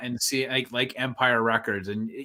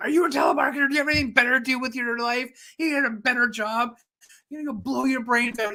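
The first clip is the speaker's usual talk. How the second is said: mock, higher, vicious, hostile, over-the-top tirade; 11 semitones higher than usual. Retelling a character's reply to a telemarketer: imitating a hostile over-the-top rant. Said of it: "Why is she going so over the top?".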